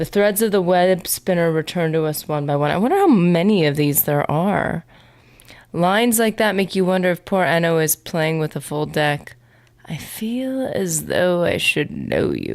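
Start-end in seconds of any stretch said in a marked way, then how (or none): 9.8-12.5 listless, slow, sluggish, lethargic voice. A character in the game speaks, in a lethargic voice. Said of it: "he always sounds super lethargic".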